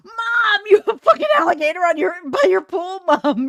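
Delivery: shrieking yell, very high and loud. Retelling a reaction to a photo in the family chat: imitating own yelling at mom. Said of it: "I'm yelling at her".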